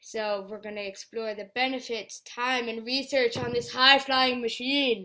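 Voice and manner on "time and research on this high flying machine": slow, loud, drawn-out dramatic voice. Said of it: "I did a dramatic voice".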